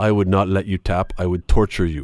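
put-on Portuguese accent. Retelling what a man said to him, in a Portuguese accent. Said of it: "with this Portuguese accent".

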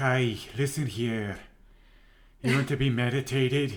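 put-on Scottish accent. Describing meditation guides who talk you through a session, in a Scottish accent. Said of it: "in a Scottish accent".

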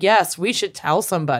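put-on creepy voice. Retelling a killer's calm reply to a classmate: imitating a creepy voice. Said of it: "in this creepy voice".

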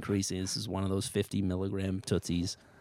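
ordinary talk

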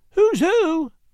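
very high, put-on, disguised falsetto. A man shows how to speak in a disguised voice while covering someone's eyes, high falsetto. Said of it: "Dell turned on a high falsetto".

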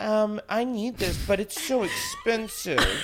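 put-on high sugar baby voice. Recalling what they said on a past episode, in a put-on sugar baby voice. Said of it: "that's like my sugar baby voice".

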